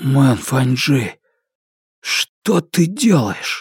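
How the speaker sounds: husky, hoarse, croaking and rasping voice. Narrator reads a man questioning his friend after silent staring; hoarse voice. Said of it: "осипшим голосом Фанму спросил".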